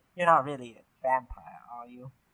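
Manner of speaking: soft, hushed true half-whisper. In a role-playing game, leaning in close to another character, half-whisper. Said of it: "I kind of lean in and I whisper".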